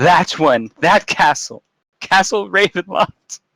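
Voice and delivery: crying. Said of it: "collapses into this moaning, sobbing heap".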